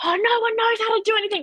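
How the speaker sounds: shrill, very high, loud sideline-style yell. Retelling someone yelling from the sidelines at a school game: imitating someone yelling. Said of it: "he is yelling on the sidelines".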